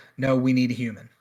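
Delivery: normal talking voice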